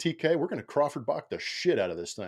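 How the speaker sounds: mock sarcastic jab, swooping pitch. Retelling a remark to a colleague about another ad read: retelling own sarcastic remark. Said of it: "it's like sarcastically".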